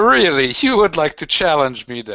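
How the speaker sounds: challenging, defiant character voice. Voicing the Harlequin who challenges a player: Harlequin voice. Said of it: "the Harlequin just, like, puts his hands around and goes".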